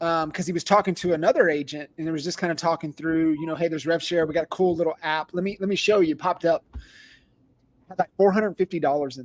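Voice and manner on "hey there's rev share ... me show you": plain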